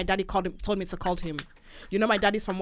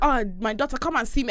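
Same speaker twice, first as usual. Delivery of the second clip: usual speaking voice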